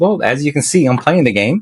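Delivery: acted snarky, sarcastic tone. Retelling a reply to a chatter who asked about the game: imitating own snarky tone. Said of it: "just being really snarky".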